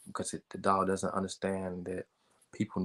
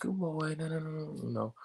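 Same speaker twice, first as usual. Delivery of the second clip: put-on high, slow, cutesy baby talk; 9 semitones higher, 4 dB quieter than usual. Explaining how people talk to puppies, the speaker demonstrates: high-pitched puppy talk. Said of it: "talk to puppies in a very high pitched".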